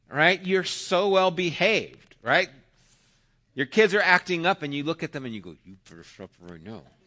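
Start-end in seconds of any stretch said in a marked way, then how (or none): 5.6-6.8 put-on teeth-gritted growl, much lower and quieter. A parent warning misbehaving kids in public, retelling a growl through teeth. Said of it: "kind of growl at them through their teeth".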